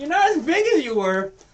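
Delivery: very high, loud, flamboyant pirate mouse voice. Voicing a pirate mouse who greets the party: voicing a pirate mouse. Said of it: "ridiculous pirate hat and this flamboyant clothes".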